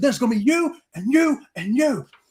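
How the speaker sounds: high, furious top-of-lungs scream, acted out. Retelling threatening a group of men on a deck; retelling a scream. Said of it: "I was just screaming at the top of my lungs".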